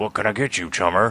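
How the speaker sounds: monster troll voice. Playing the troll working a donut stand, greeting a customer in a troll voice. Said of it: "was that [name]'s vo- or troll voice?".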